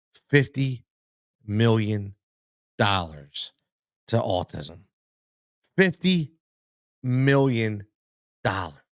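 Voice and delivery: slow, deliberate delivery, each word weighted. Speaker repeating a donation amount, slow and emphatic. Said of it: "I say this so slowly and emphatically".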